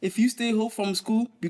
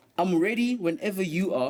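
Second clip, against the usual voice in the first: ordinary talk, nothing marked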